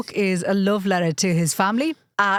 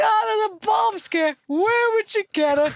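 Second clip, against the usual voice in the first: put-on laughing voice, higher; 13 semitones higher than usual. Retelling a father's reply to a police officer: imitating dad laughing while talking. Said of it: "breaks his shit laughing. He's like".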